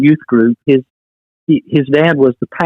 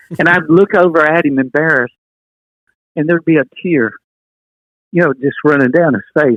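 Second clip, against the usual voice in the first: choked-up voice, catching and breaking with emotion; 5 semitones higher than usual. Recalling a moment with another person, the speaker gets choked up. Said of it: "I'm sorry to get choked up".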